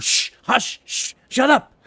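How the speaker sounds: slow shushing, half muttered under the breath. A player acting their character, hushing someone before heading to the door, half under breath. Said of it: "kind of half under my breath".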